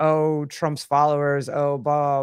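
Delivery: normal talking voice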